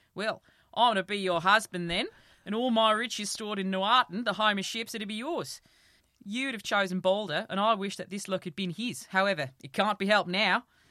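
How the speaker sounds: loud, put-on Australian accent. Reading a story aloud, voicing the husband character in an australian accent. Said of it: "I think an Australian accent suits him".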